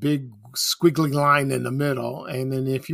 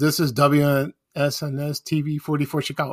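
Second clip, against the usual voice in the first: usual speaking voice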